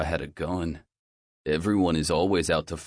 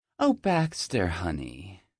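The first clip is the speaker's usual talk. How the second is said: syrupy, sweet, honeyed, purring voice. The new guidance counselor speaks to baxter at his dad's meeting in a syrupy sweet purr. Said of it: "she purrs in a syrupy, sweet voice".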